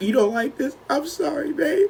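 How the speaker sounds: put-on crying, very high and teary. Retelling how a friend apologized during a bad high: imitating someone crying. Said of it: "She started crying".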